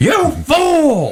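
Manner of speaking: shrill comedian voice, very high, "fool" drawn out. Doing a bit in a voice you love doing, in a Gilbert Gottfried voice. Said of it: "I love doing his voice so much".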